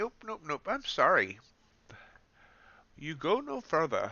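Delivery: dodgy put-on English accent, sing-song. Voicing something that keeps failing to reach the day's high, bad English accent. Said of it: "Not sure why it does it in the English accent".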